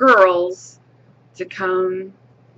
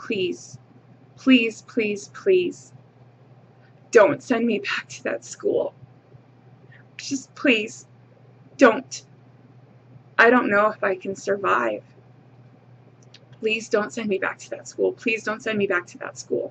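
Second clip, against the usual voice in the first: put-on tearful, desperate pleading, repeated; 3 dB quieter than usual. Retelling begging a mother not to be sent back to school: imitating a child's pleading. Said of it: "begging and pleading with my mother".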